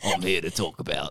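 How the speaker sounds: put-on Australian accent. Imitating a co-host for the listeners: imitating Andy's Australian accent. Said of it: "the Australian accent".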